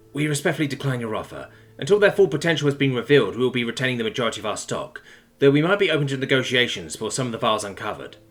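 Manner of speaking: ordinary delivery, nothing marked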